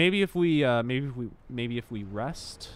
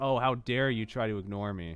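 usual speaking voice

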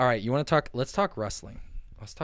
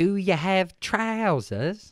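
fake British accent, pitched up, loud; 8 semitones higher, 5 dB louder than usual. Joking about a trip to Wales, in a put-on accent. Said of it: "what accent are you trying to do?".

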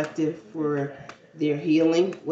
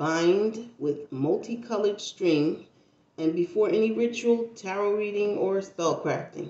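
very slow deliberate reading, "bind" stretched out; 4 semitones higher than usual. Closing out a reading for listeners, reading the text very slowly. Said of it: "I'm going to read it as slow as I can".

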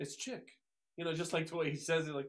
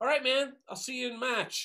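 put-on Boston accent, loud and pitched up; 8 semitones higher, 8 dB louder than usual. Retelling someone's parting words, in a boston accent. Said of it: "Boston accent, right?".

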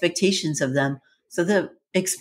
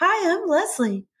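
voice pushed way, way up into very high pitch; 12 semitones higher than usual. Demonstrating how an aerobics instructor from a 1980s TV show talks, in Leslie's really high voice. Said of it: "she talks like this".

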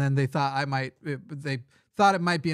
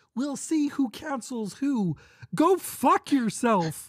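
very high-pitched, slow caricature voice; 11 semitones higher than usual. Getting back into an impression addressing woke moralists, put-on impression voice. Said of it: "Let's see if I can get in the voice again".

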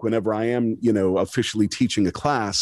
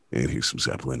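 put-on soft, mellow, stoned classic rock DJ voice; 11 semitones lower, 6 dB quieter than usual. Demonstrating radio DJ styles as the classic rock DJ, sounding stoned. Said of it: "it sounds like I'm baked right now".

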